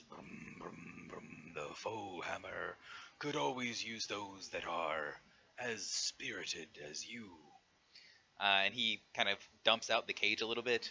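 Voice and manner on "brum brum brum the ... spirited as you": put-on giant voice with chuckles. Voicing a giant who praises the spirited adventurer: giant voice. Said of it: "and says".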